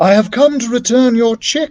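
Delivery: trembling, quivering, very high-pitched voice. Reading a story aloud, a character speaks to the woman guarding her lair: quivering voice. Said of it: "said Ignatius in a quivering voice".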